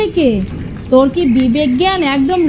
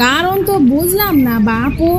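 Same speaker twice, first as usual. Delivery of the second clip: usual speaking voice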